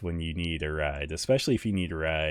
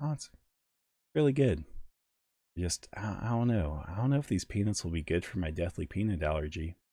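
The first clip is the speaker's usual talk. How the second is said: put-on deadpan, straight-faced delivery; 2 semitones higher than usual. Speaker reenacts answering her question about the food, retelling a deadpan reply. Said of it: "I looked at her straight face".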